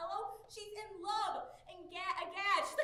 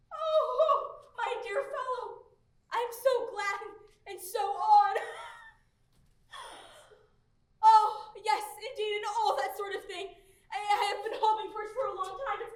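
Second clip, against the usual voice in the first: overjoyed, off balance with joy; 9 dB louder than usual. A father answering a young man who asks for his daughter's hand, overjoyed. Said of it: "I'm off my balance with joy".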